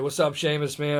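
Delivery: ordinary talk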